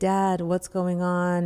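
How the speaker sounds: loud, drawn-out, mock weepy, tearful pleading. Retelling calling dad while he was attacked on tv: imitating herself crying.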